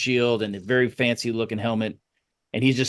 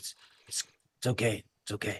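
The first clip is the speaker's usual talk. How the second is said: very quiet, hushed, reassuring, barely audible whisper; 2 semitones lower, 11 dB quieter than usual. Retelling a character calming a small gnome, whispering. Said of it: "He whispers".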